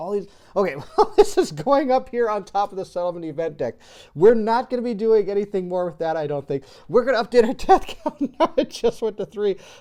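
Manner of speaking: loud talking with laughter running through it. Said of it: "sorry I'm laughing so much".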